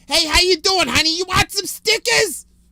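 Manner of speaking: ear-splitting, very loud, shrill, high-pitched holler. Retelling a woman offering stickers right next to him, imitating a very loud woman. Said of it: "would just be the loudest motherfucker I've ever heard".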